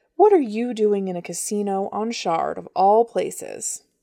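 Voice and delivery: ordinary delivery, nothing marked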